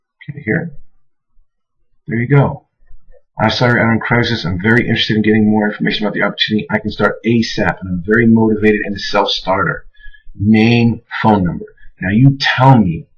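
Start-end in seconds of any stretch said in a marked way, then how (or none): none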